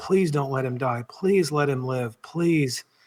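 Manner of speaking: acted crying, desperate, tearful voice. Retelling begging God out loud as someone lay dying: retelling a crying, desperate plea. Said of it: "crying and in desperation".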